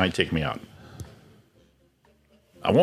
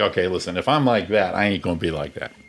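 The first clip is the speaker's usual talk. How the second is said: normal talking voice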